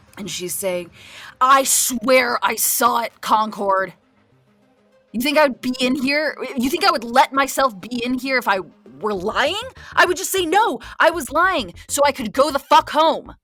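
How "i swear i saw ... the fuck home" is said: full-throated, shrill screaming at top of voice. Narrating a scene, voicing a jailed woman insisting she's not lying, yelling at top of her voice. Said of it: "is yelling at the top of her voice".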